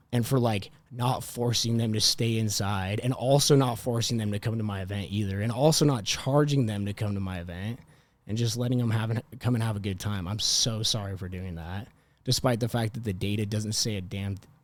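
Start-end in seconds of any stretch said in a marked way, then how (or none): none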